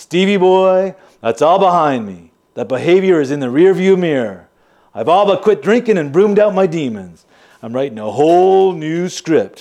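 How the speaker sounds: fake, put-on Irish brogue. Retelling what he told you the last time you spoke, in a phony irish accent. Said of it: "dropping the phony Irish accent".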